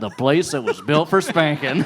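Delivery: folksy ad voiceover tagline delivery.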